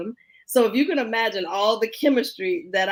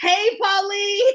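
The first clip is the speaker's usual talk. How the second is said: loud, very high-pitched yelling; 11 semitones higher, 3 dB louder than usual. Greeting someone who just joined the conversation: yelling a greeting. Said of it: "I'm, like, yelling".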